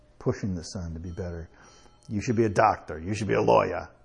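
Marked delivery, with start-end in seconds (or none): 2.1-3.8 put-on pushy voice with a slight Jersey accent. Speaker acting out a mother pushing her son, little Jersey accent. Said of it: "you got to say it with a little Jersey accent there".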